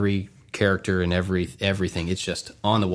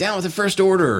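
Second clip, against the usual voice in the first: very high, shouted yell; 11 semitones higher than usual. Retelling what was called out walking past stormtroopers: imitating own yell. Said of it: "and I yelled".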